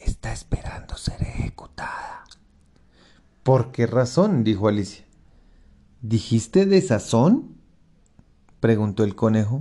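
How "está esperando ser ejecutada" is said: hushed, breathy whisper, very close. The rabbit leans to Alice's ear, answering where the duchess is; whispering. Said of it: "susurró".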